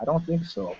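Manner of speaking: said very quietly and softly.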